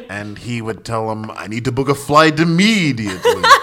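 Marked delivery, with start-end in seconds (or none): 1.3-3.4 suave vampire voice. Retelling someone's prank calls to airlines, in a Dracula voice. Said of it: "Sanjay had this cool Dracula voice".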